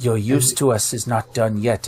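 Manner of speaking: hushed whisper in a character voice. Speaking in character to a rescued horse, calming it: whispering in character. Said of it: "whisper to him".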